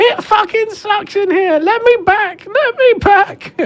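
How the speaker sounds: frantic screaming. Game narrator voicing a figure who runs past the players, crazed screaming. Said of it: "crazed as he runs at you and just starts screaming".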